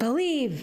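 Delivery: shrill, very high-pitched shout. Speaker describes an old man on a Toronto street corner, imitating him yelling. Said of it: "he yells".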